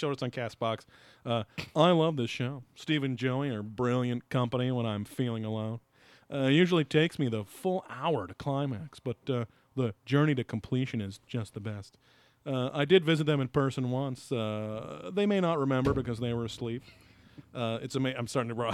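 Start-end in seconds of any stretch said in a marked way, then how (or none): 1.7-16.8 reading voice gradually sliding into a cartoon voice. Reading a listener comment aloud, drifting into Mr. Mackey voice. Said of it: "go into, uh, Mister, um, Mackey from South Park".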